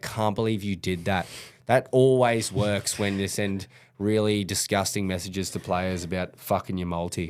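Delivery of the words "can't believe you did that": ordinary talk, nothing marked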